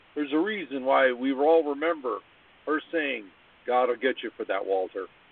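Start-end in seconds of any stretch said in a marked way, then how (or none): 3.7-5.1 deadpan sitcom voice, pitched lower. Discussing a classic sitcom, quoting a character's famous line, Maude deadpan impression. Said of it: "in that deadpan voice".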